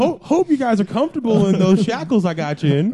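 high, loud voice with wide swooping pitch. Imagining Tom Hanks playing Lex Luthor: Tom Hanks as Woody voice. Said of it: "he just does the Woody voice".

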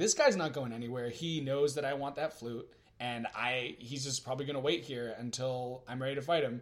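plain

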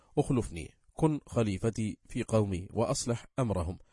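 normal talking voice

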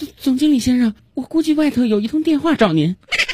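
cautious, stammering voice.

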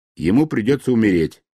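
ordinary delivery

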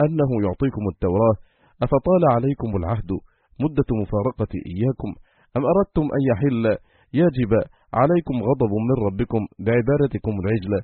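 ordinary delivery

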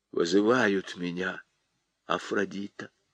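very soft, low, hushed murmur. After he stops wailing, a man answers the woman: said quietly. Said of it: "сказал тихо".

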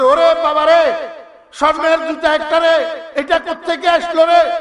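high, loud astonished shout. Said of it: "তো চিৎকার শুরু করছে".

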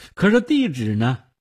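ordinary delivery

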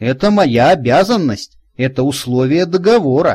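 ordinary delivery, nothing marked

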